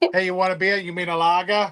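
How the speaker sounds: attempted Boston accent. Joking about a thick New Yorker and a Bostoner, the speaker does a Boston accent.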